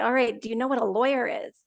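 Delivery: mock condescending, talking-down tone. Retelling how an officer explained rights: imitating a condescending tone. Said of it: "talking to me like I'm a child".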